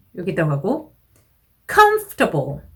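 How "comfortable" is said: comfortable with first syllable com stressed firmly. Teaching English word stress, stress on com in comfortable. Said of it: "앞에 들어가고".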